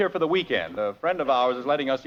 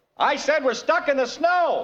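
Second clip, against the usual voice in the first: very high, loud shout; 10 semitones higher than usual. Young man repeats himself to a man who couldn't hear, shouting. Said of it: "you don't have to shout".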